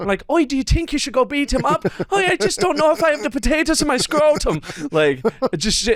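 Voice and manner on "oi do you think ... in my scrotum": bad put-on Irish accent, very high-pitched. Narrating another man's conversation out loud, in the worst Irish accent. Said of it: "in the worst Irish accent I can muster".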